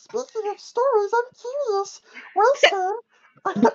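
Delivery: very high-pitched puppet voice. Using the Elmo voice to play the little girl in a story: Elmo voice. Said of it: "Use Elmo to voice the little girl".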